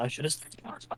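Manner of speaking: muttering angrily under breath. Voicing a character who just failed a spell: cursing under his breath. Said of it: "John cursing under his breath".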